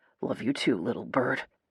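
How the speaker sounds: thick, emotional voice. Reading aloud a farewell before a gunfight: thick voice. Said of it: "His voice is thick".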